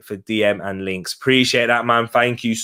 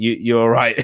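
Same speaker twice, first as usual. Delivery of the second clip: put-on proper Borough accent. Retelling what a dad said to a passerby: imitating a proper Borough accent. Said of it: "a proper Borough accent".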